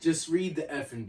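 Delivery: yelled voice. Retelling a character's line from a show: imitating a shout. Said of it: "In caps".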